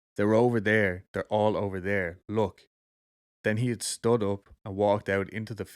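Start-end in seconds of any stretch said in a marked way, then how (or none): none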